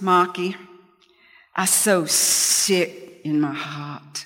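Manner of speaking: put-on Boston accent, very slow and drawn-out. Retelling what Michael said to Marcus, imitating Michael's Boston accent. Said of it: "he sounded like he was from Boston".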